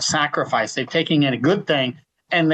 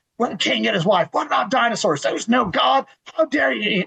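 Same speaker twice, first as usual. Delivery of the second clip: mock high, relentless, nonstop barrage of yelling; 8 semitones higher than usual. Retelling a man who wouldn't let anyone talk, imitating him yelling questions. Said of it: "just yelling question after question".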